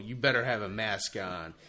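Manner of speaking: ordinary talk, nothing marked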